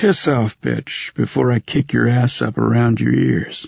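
calm, even, menacing. Narrator reads Tully telling a woman off, in a gentle, even tone. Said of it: "He used that gentle, even tone Smeds knew meant maximum danger".

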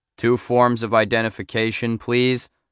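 ordinary delivery

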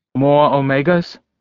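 ordinary delivery

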